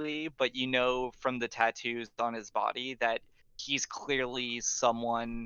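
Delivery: plain reading voice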